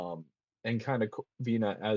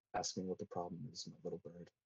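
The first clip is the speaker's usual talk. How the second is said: very quiet, hushed, barely-there murmur; 2 semitones lower, 14 dB quieter than usual. Narrating a scene to a player, a normally brash woman speaks in a very quiet voice. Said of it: "in a very quiet voice".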